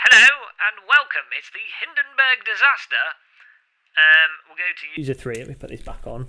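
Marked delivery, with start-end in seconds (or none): 0.1-3.0 put-on very loud, harsh, shrill old-radio announcer voice. Testing saved voice profiles, the speaker tries out a radio voice. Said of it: "We get we get the radio voice there".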